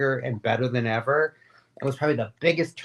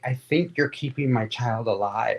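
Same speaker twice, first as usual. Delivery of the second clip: mock crying, tearful; 2 semitones lower than usual.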